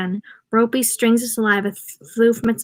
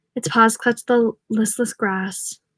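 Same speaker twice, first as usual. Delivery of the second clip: plain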